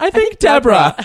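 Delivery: very high, loud shout through laughter.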